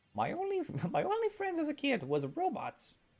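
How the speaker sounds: very high, sing-song, swooping mad-scientist moan. Joking about an evil scientist's backstory: Doofenshmirtz voice. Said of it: "Perfect Doofenshmirtz voice".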